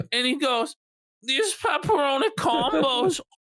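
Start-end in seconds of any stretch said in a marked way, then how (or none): 1.2-3.2 put-on mouth-full voice, higher. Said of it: "his mouth full of fucking pepperoni combos".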